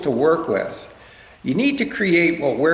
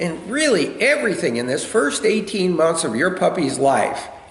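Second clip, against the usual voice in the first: normal talking voice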